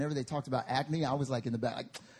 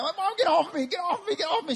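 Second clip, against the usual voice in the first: put-on shrill, high, loud screaming, over and over; 5 dB louder than usual. Retelling being pinned by Mom over a pimple, retelling a scream. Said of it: "I'm screaming, I'm yelling".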